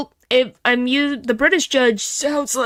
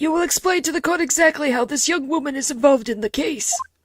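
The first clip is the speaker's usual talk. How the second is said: put-on elderly man's voice in the lowest register; 3 semitones higher than usual. Addressing the court in a role-play scene, the speaker uses an old man voice. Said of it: "this is the closest old man voice I can do".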